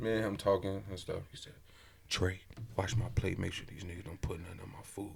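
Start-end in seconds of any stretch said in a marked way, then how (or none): 2.1-5.1 very quiet, hushed under-the-breath whisper. Retelling a brother's words at a family dinner: imitating someone whispering. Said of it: "Why are you whispering?".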